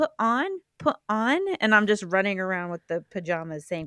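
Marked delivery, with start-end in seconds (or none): 0.0-1.4 put-on tiny, small, high little-kid toddler voice. Retelling a childhood home video of opening new pajamas: tiny little-kid voice. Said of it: "in my little tiny [name] voice saying".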